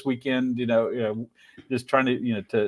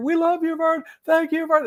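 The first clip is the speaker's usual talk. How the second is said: put-on very high, happy crowd-style cheering shout. Retelling how passersby reacted on seeing him, imitating a cheering crowd. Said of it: "they just start cheering".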